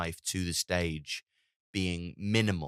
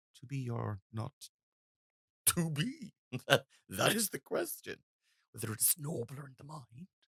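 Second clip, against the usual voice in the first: halting, pitched-up, searching for each word; 7 semitones higher, 4 dB quieter than usual. Show how Andrew Scott does a soliloquy, as if just coming up with it as you go. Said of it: "Andrew Scott does that a lot".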